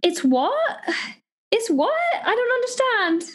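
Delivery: put-on trying a British accent. Mimicking a person who doesn't understand, in an attempted british accent. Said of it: "So that's me trying to do a British accent".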